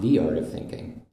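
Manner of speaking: "the" lifted as the most prominent word.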